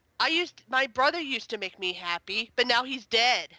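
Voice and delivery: ordinary talk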